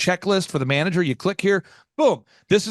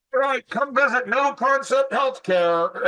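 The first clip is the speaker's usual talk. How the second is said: loud carrying announcement yell; 7 semitones higher than usual. Acting out running outside to promote a business: yelling to passersby. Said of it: "Why are you yelling at me?".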